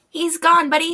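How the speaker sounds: small, tiny voice. Telling a story, the speaker voices someone calling from above, in a tiny little voice. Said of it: "you hear a little voice go".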